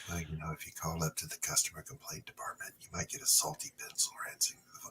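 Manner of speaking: very soft pleasing voice. Retelling hearing a voice over the phone: imitating Luke's very soft voice. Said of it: "talking with that very soft, pleasing ass voice".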